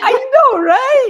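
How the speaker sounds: high, loud, excited and thrilled. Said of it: "I said".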